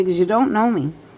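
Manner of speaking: ordinary delivery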